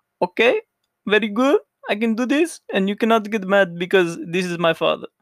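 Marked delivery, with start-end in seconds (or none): 0.2-2.6 loud, high-pitched Brazilian accent. Speaker shows listeners they can do it, in a brazilian accent. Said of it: "I can make all the Brazilian accent I want".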